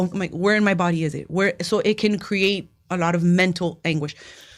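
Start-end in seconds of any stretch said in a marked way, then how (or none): none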